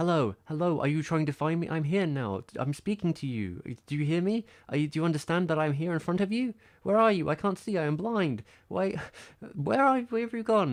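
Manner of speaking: frantic, loud, high, panicked cat-like yowl. Speaker acts out the cat walking into a room looking for them, voicing a screaming cat. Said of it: "she'll walk into a room like".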